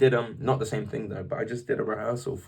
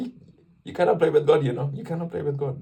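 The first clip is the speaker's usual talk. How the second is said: horrible put-on Spanish accent, pitched up; 5 semitones higher than usual. Imitating a Venezuelan friend's warning: horrible Spanish accent. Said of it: "That was a horrible Spanish accent".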